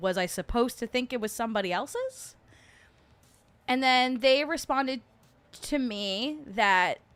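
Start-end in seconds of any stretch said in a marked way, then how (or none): none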